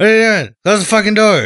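very high, very loud, rushed incoherent babbling shout. Describing a movie character being picked up by some guys, imitating him incoherent. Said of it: "He's incoherent".

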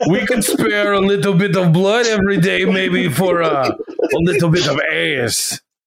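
bad, clearly off, put-on Greek accent. Imitating a group of rich Greek men, in a bad Greek accent. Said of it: "that's my Greek accent".

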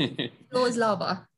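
slow, put-on British accent. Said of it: "Talking like that".

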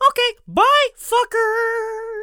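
very high, loud, squeaky voice. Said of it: "he sounded kind of like Mickey Mouse".

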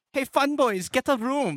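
Eurotrash party-guy voice. Comparing how a man sounds to a cartoon character, Simpsons Euro trash guy voice. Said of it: "He sounds like the Euro trash guy from that episode of The Simpsons".

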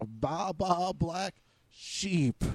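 bah bleated in a sheep voice. Calling the other speaker a sheep over a phone upgrade: bleating sheep impression. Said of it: "my sheep impression there".

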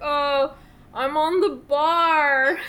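put-on loud, very slow, drawn-out drunken drawl. Retelling a wedding scene of a drunk man talking to another man: Tom Hanks drunk impression. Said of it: "drunkenly talking".

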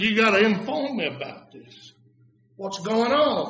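hushed half-whisper, kept under the breath. Retelling a half-whispered question to the pastor at the table: imitating his own half-whisper. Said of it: "I whispered to the pastor".

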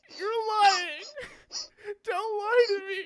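mock very high, drawn-out sobbing. Speaker retelling what he said while sick over the toilet, reenacting crying. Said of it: "while I'm crying".

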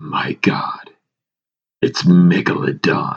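put-on sexy, sultry-sounding voice. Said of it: "In a sexy Jason Statham voice".

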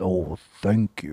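put-on deep, distinctive voice. Speaker retells handing water to Mr. Jones and his reply, Mr. Jones deep voice impression. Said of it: "That deep".

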